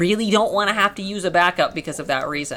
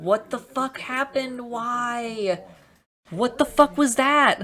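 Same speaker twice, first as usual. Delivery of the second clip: furious, pitched-up outburst with "why" drawn out; 6 semitones higher than usual. Reacting to something that just went wrong on screen: very pissed off. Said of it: "now I am very pissed".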